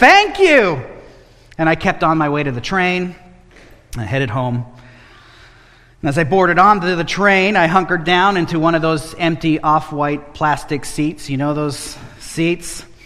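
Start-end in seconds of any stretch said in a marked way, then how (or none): 0.0-0.8 mock loud, booming, high-pitched bellowing shout. Retelling how a man thanked the speaker for a fiver, acting out his bellow. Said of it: "he bellowed out".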